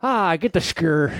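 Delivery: put-on old-fashioned Irish accent. Demonstrating an old Irish way of saying a word, in an Irish accent. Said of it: "That was an Irish accent".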